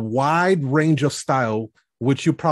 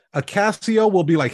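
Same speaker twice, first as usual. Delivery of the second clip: ordinary talk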